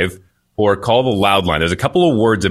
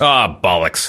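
annoyed, fed-up, frustrated curse; 3 semitones lower than usual. Asked for an example of a frustration word, the speaker gives one, frustrated exclamation. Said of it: "Do it like how you would say it".

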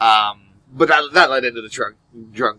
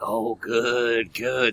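put-on drunk, creepy drawl with drawn-out "good"; 6 dB quieter than usual. Acting out a relative approving someone's behavior: imitating a drunk old creepy uncle. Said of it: "says drunk old creepy uncle".

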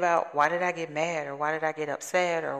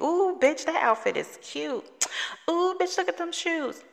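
very high, fond, gushing affection; 14 semitones higher than usual. Describing how girlfriends talk when they get together, imitating affectionate girlfriend talk. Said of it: "the endearment, the embracing of the word".

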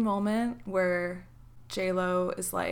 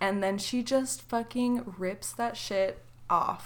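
ordinary delivery

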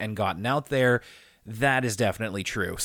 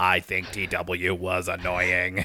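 monotone, flat, slow, machine-like robot voice; 6 semitones lower than usual. Joking about getting a robot to write reviews: mock robot reviewer voice. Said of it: "just get a robot to review".

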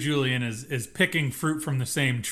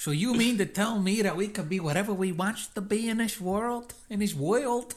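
high, cartoonish accent like a cartoon mouse; 7 semitones higher than usual. Retelling Trotta's reaction to a new idea, the speaker quotes him in that accent. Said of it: "He says it in that accent".

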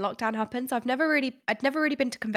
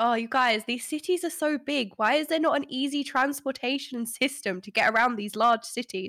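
thick sarcasm with fake complaining tone. Acting out past self running around a big city, retelling own sarcastic complaint. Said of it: "I'm super sarcastic sometimes".

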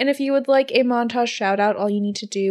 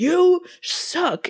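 play-acted very high, shrieking, screaming delivery; 10 semitones higher than usual. Retelling a judge turning on a cheer tryout: imitating someone screaming. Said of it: "starts screaming at her".

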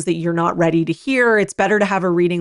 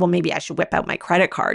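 mock rude, needling, cutting tone; 3 dB quieter than usual. Retelling a pushy remark during a reading: imitating a very rude tone. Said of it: "in a very rude tone".

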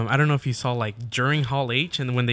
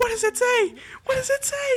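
very high, squealing, thrilled, excited yell. Retelling a fan at the reveal asking what it says, imitating super-excited yelling. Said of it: "She's super excited".

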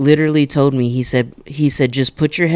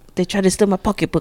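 imperfect put-on Caribbean accent, pitched up; 6 semitones higher than usual. Retelling what a woman said, in an attempted Caribbean accent. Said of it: "I can't really talk in a Caribbean accent".

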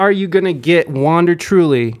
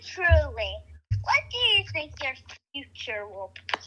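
very high, very soft, hushed, spooky eerie voice; 10 semitones higher, 14 dB quieter than usual. An unidentified voice interrupts with a question, in a spooky voice. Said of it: "Who's doing that's really spooky".

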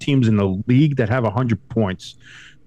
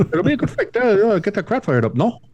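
put-on very high voice with a light French accent; 11 semitones higher than usual. Repeating a mic'd-up player's words with a little french accent. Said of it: "There's a little French accent".

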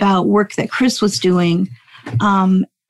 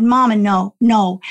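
put-on indignant, insistent, angry child voice. Retelling how an angry daughter protested in the car: imitating an angry child. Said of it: "And she got so angry".

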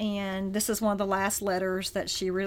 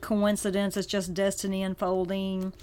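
ordinary delivery

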